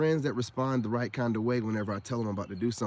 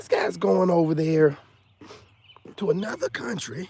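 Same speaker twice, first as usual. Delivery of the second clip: put-on raised, high-pitched old man voice; 7 semitones higher, 6 dB louder than usual.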